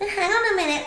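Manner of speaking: bratty voice. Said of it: "It's like a brat voice coming out going".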